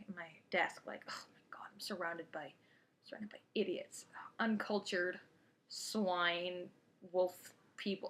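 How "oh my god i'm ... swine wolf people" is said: fuming, seething whispered mutter under the breath. Retelling sitting at a desk after a teacher's remark: imitating own past fuming. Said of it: "sitting there fuming in my".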